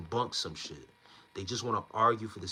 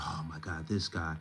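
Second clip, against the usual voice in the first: put-on slow, fed-up, frustrated exasperation; 3 semitones lower than usual. Retelling how the caller reacted on the phone: imitating someone getting frustrated. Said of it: "getting frustrated".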